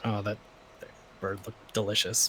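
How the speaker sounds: grumbled under the breath, very soft and quiet. Voicing the character Eclipse, who grumbles under his breath. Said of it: "he basically just grumbles about".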